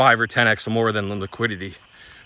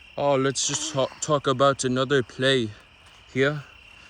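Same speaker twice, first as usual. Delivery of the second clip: crazy, failed put-on Canadian accent; 4 semitones higher than usual. Joking about sounding canadian, trying a put-on canadian accent. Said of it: "I can't do the Canadian accent".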